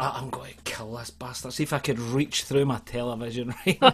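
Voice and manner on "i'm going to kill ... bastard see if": ordinary delivery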